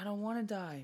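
put-on crying pig voice, sobbing the words. Retelling how the pig in a movie cried: imitating a crying pig. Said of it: "crying, he's like".

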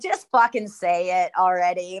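ordinary talk, nothing marked

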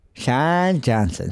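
low, goofy, dumb-sounding put-on silly voice. Podcast host doing a recurring bit for a listener from Colorado, in a silly voice. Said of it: "I always do that voice".

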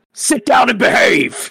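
clumsy bad put-on voice, very high shrill shout. A player's character shouts at ninjas ready to fight, in a bad put-on voice. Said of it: "bad voice".

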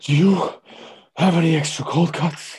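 mock winded, puffing teenager, high and loud. Recalling a teenager named Dustin who kept coming in: out-of-breath Dustin impression. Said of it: "like out of breath, overweight teenager".

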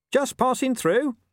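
very high, strained, strangled, forced cheerfulness. Reading a dog's line as unseen creatures surround him, in a strangled cheerful voice. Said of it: "he said in a strangulatedly cheerful voice".

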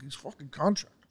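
imitated pissed-off voice. Retelling what the passenger said after hanging up: imitating someone pissed off. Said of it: "all pissed off".

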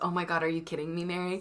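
put-on appalled disgust. Retelling another speaker's reaction to a hashtag idea: imitating appalled disgust. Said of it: "The absolute appalling look of".

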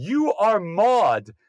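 play-acted, sudden, blurted-out exclamation. Telling a story about an aunt meeting someone on the street, retelling an aunt's yell. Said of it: "she just yelled out on the street".

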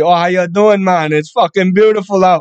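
put-on Jamaican Patois-style accent. Retelling what a lady said to him while he painted her hallway, imitating Miss Gloria's Jamaican accent. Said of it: "She got like this Jamaican, like Rastafarian type fucking accent".

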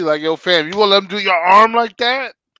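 very loud yell, high and rising. Watching a fighter get caught in an arm bar, the speaker retells yelling at the tv. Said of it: "I'm just sitting there yelling at the TV".

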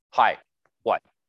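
play-acted blunt, direct, quick and curt. Acting out how a high-D personality answers a call: mock-curt, quick reply. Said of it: "They'll be quick, direct to the point. You can hear it in their tone".

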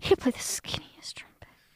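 hushed, soft, breathy whisper. Riffing on which instrument an actor could play, until the other speaker objects: whispering. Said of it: "Why are you whispering at me?".

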